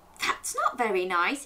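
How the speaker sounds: plain reading voice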